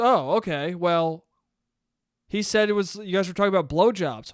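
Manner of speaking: normal talking voice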